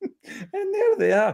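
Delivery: very high, piping, drawn-out voice. Host welcoming the gentlemen on the show, a bit high-pitched. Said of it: "that was a bit high pitched there".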